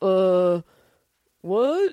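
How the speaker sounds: utterly dumb, clueless, dim-witted voice. Describing the dumbest person ever seen, Idiocracy-dumb voice. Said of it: "I mean literally idiocracy dumb".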